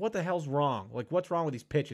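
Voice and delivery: exasperated, imitated yelling. Retelling a pitcher yelling at the umpire: imitating someone yelling. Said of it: "He's yelling at the ump".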